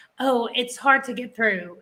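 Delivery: ordinary talk, nothing marked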